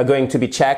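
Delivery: pitch lifting upward at the end of checked. English lesson on yes-no questions: rising pitch on checked. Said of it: "Vous voyez, vous remontez comme ça".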